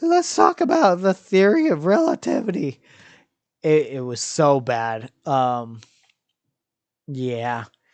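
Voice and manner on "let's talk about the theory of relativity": put-on high, loud cracking voice, like a teenager's. Recalling a bad performance as Einstein: cracking Albert Einstein voice. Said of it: "I started sounding like um, I was going through puberty or I was the guy from The Simpsons".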